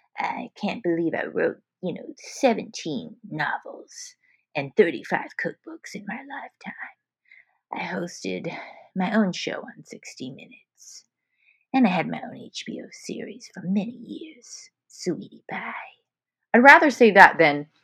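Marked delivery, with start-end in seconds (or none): 0.2-15.8 put-on trembling, shaky, breathy old lady quaver. Imagining being on a deathbed someday, the speaker tells people things in a shaky grandma voice. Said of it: "shaking with my grandma voice".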